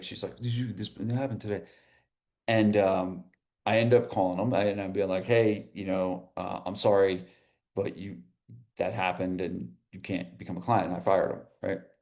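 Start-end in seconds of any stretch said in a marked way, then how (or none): 0.4-1.6 mock frantic, rushed, hushed, worried. Speaker retells her trainer calling her, imitating a frantic voice. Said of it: "She called me and she's all frantic".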